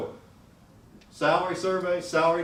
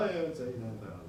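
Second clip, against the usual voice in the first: quick, begrudging. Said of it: "then you begrudgingly go".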